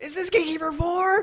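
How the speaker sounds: put-on very high, loud, thrilled, eager excited burst. Retelling a phone call, the speaker re-enacts their own question: imitating own excited voice. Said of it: "because I was really excited and that's how I sounded".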